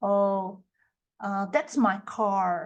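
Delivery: slow American English pronunciation with R sounded. Portuguese speaker illustrating the north american pronunciation people find beautiful: north american accent. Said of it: "a pronúncia norte-americana".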